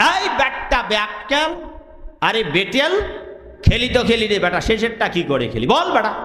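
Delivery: ordinary delivery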